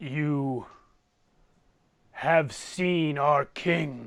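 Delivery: deep, booming giant's voice. Storyteller voices a giant speaking to the players, in a deep booming giant voice. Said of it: "in his deep, booming voice".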